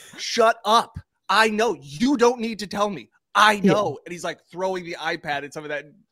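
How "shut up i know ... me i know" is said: long high-pitched yelling. Retelling a sideline clip where Tom Brady yells back at his coach: imitating Tom Brady yelling.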